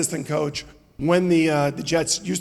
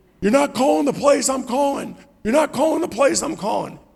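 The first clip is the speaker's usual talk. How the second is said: mock, high, screamed voice; 9 semitones higher than usual. Quarterback recounting the coach screaming at him on the sideline: imitating the screaming. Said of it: "he starts screaming at me".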